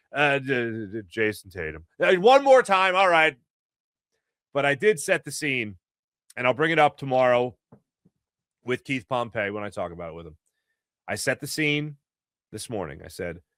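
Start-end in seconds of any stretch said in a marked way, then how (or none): 0.4-1.8 depressed, deflated announcer voice, slow and drawn out. Imitating the announcer naming the opposing team: Matt Cord depressed announcer voice. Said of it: "the opposing team in a depressed voice".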